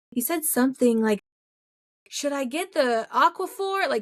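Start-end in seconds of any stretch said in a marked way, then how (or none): 2.1-3.9 put-on, too loud, high-pitched, drawn-out voice. Retelling what the partner asked during a diaper change: imitating someone talking super loud. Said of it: "super loud".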